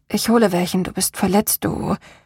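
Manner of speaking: ordinary talk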